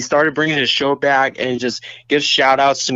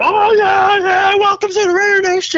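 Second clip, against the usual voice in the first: very high, shrieking, hyped-up scream; 4 dB louder than usual. Imitating how Raider Rob's voice rises: imitating Raider Rob's scream. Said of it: "the scream, is like".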